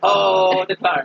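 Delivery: put-on Swedish accent. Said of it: "This is mostly just an impression of [name]'s Swedish Klarna bit".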